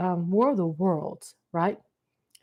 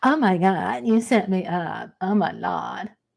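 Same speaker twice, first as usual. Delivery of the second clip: very slow, drawn-out, aggrieved, complaining moan. Imitating a viewer who complains about being set up: imitating a viewer who feels set up. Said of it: "anybody coming there and go".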